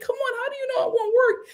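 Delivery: mock very high, crying, tearful, begging voice. Retelling a woman pleading with a man to stay: imitating Annie begging and crying. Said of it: "begging this man, crying".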